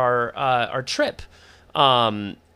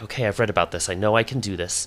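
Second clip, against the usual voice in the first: mumbled muttering under the breath; 3 semitones lower than usual. Character at the front of a wagon, about to take the reins, mumbling under breath. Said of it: "I start mumbling in my breath".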